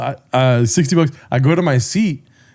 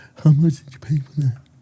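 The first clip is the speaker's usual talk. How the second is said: quiet, soft-spoken, under the breath. Retelling what a deaf man at a baseball game asked: imitating a deaf man speaking quietly. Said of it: "I did a really good impression both times there".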